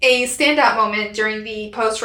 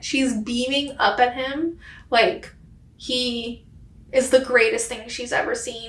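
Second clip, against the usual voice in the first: soft, choked-up voice on the verge of tears; 5 dB quieter than usual. Describing a moment at a ceremony, the speaker getting choked up. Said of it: "And then I'm gonna cry".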